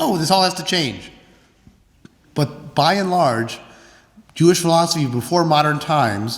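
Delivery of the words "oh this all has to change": plain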